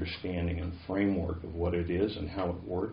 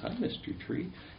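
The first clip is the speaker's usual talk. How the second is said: put-on little voice, much higher pitched; 10 semitones higher, 3 dB quieter than usual. Speaker retells how someone greets a big redwood tree, in a little voice. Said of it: "he'll say it in his little voice".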